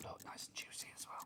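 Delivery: hushed, very quiet whisper, barely voiced. Showing ink pad colours to another speaker, whispering. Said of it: "why did I whisper that?".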